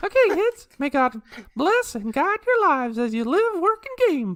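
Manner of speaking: squeaky cartoon mouse voice. Redoing the show's closing line, in a Mickey Mouse voice. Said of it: "in the Mickey Mouse voice".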